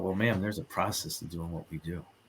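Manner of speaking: mock dramatic, very soft, hushed, theatrical tour-guide delivery. Retelling what was said to a woman wanting the doll: imitating own dramatic delivery. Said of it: "I'm a little dramatic".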